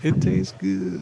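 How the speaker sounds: rough, creaky put-on voice. Quoting what the president said in a story: Bill Clinton impression. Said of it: "It is a very good impression".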